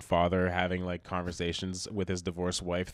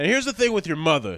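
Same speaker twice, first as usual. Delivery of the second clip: very loud, shrill, high-pitched yelling; 10 semitones higher, 9 dB louder than usual. Retelling a father yelling at his kid in the street: imitating a father yelling. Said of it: "yelling at his kid, going like".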